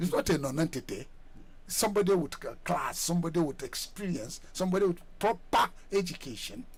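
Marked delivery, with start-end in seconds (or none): 4.5-6.7 emphasis leaned on the word proper. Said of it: "Emphasis on proper".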